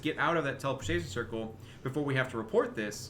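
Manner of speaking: normal talking voice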